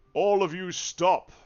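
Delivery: big booming call, loud and high. A storyteller voices a centaur calling down from a nearby clifftop: booming voice. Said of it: "you hear a booming voice".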